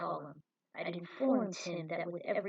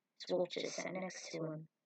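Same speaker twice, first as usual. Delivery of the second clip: ordinary delivery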